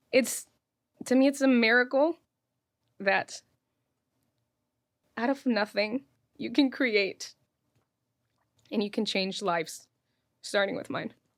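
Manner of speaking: crying while talking. Talking to another speaker about an emotional day, crying while talking. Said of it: "And here I am crying".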